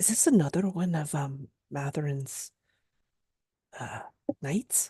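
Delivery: under her breath. A player's character leans toward a companion, asking under her breath. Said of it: "just kind of under her breath is like".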